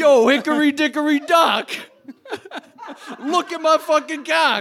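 very high-pitched stand-up comic voice. Giving a joke horror movie title, slipping into an Andrew Dice Clay voice. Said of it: "that turned into Andrew Dice Clay".

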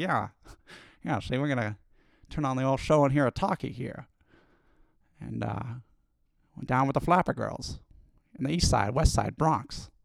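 put-on 1930s radio voice. Joking about calling these talkies like the old days: 1930s voice. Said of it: "that nineteen thirties voice".

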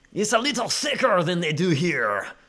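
thick, exaggerated put-on French accent.

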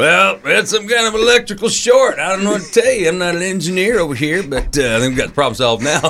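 playing dumb, pitched very high.

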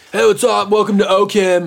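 try-hard cool teacher voice. Mocking a teacher trying to be your friend, imitate a try-hard cool teacher. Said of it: "We sound like that teacher that tried to be cool".

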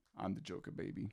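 put-on villain voice. Retelling a drama class video, imitating a guy doing the Joker. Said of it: "he goes".

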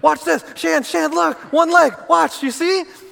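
put-on very high, creaky, drawn-out teasing child voice. Retelling how they once mocked their own kids, mocking the kids. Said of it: "And I just started going".

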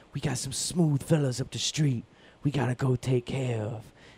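soft, hushed, eased-out jazz man voice. Show someone who hasn't heard him lately how he talks now, in a Danny Glover voice. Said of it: "he kind of talks like this".

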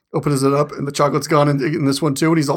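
ordinary talk, nothing marked

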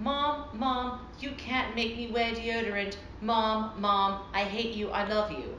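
ordinary talk

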